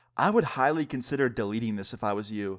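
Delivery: ordinary talk, nothing marked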